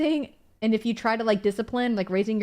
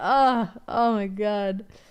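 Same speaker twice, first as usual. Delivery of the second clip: put-on crying. Retelling boxing rounds that would not end, imitating own crying. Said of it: "Like crying".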